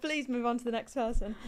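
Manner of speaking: ordinary delivery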